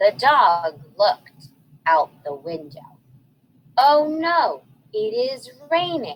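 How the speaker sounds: smooth, fluent, even, flowing reading aloud. Rereading a sentence for readers after a choppy first try, smooth reading aloud. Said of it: "Was I better that time?".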